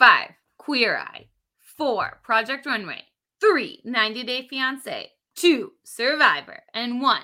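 intense, spot-on announcer-style voice. Counting down a top five list of reality shows: perfect announcer voice. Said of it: "it's like your perfect announcer voice".

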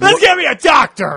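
very loud, high-pitched, bossy yell. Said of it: "yelling at people".

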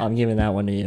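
ordinary talk, nothing marked

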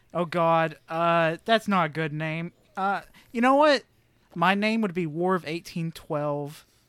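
usual speaking voice

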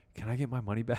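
soft, half-whispered, under the breath. Retelling what she asked on reaching her table: imitating a half-whisper. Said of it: "whispered to me and she goes".

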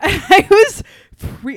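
high, loud burst of laughter while speaking.

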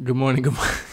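laughing through the words. Greeting listeners at the start of the podcast, laughing while talking. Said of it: "I don't know why I'm laughing".

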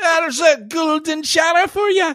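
worst fake Scottish accent, pitched very high. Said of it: "That was the worst Scottish accent".

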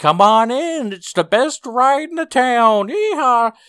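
very high, very loud carnival barker cry. Retelling a commercial scene with a carnival barker inside a closet, carnival barker voice. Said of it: "there's a carnival barker, and he's like".

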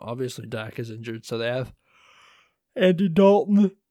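talking through a yawn. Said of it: "Excuse me, I'm yawning".

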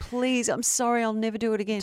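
put-on tearful, crying pleading voice. Retelling how a friend's husband apologized at her feet: imitating a crying plea. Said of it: "he'd be crying and literally s- at her feet going".

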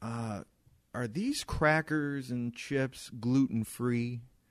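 put-on patronizing, slow, condescending, know-it-all tone. Telling of a woman asking about the menu, imitating her condescending tone. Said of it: "she says it in that condescending voice".

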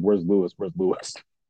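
plain

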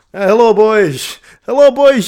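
booming, loud, put-on Dutch-Scottish accent. Joking about a Dutch Bond: mock Dutch-Scottish Bond voice. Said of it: "this is a Dutch Scottish accent".

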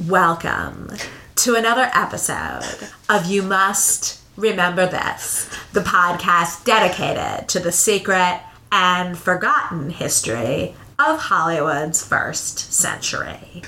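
put-on creaky, swooping valley-girl voice full of vocal fry. Imitating a podcast host's intro in a creaky valley-girl vocal fry. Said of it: "she's got a lot of vocal fry, and she sounds kind of like a valley girl. ... I'll see if I can do an imitation of her".

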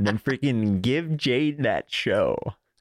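slow, laid-back surfer-dude drawl. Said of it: "You sounded like Owen for a second".

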